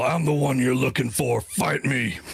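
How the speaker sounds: held-back, restrained battle call-out. Voicing Cole challenging enemies in a fight: in-character yell. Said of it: "Cole's just gonna yell".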